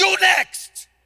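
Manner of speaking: very loud, very high shrieking scream. Retelling how the owner yelled at his architect: imitating someone screaming. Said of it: "screaming in front of".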